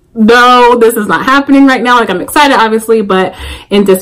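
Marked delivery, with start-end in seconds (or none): 0.2-2.0 acted crying, disbelieving. Retelling seeing family and friends gathered at the park, acting out crying in disbelief. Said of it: "I immediately burst into tears and I'm like crying".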